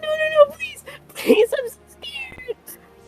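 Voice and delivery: hyperventilating and crying. Narrating a scene, voicing a woman backing away in terror: hyperventilating and crying. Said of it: "she's like hyperventilating. She's probably crying".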